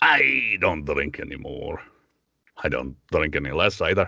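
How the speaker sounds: low Scottish accent in fantasy dwarf style. A speaker demonstrates his easiest voice, a drinking dwarf: Scottish dwarf accent. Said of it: "dwarves because they have the Scottish accent".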